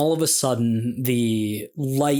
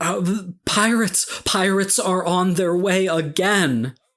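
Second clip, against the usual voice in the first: panicked character shout, much higher pitch; 6 semitones higher than usual. Narrating a game scene, voicing Lasaya warning the player, panicked Lasaya shout. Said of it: "looks at you panicked".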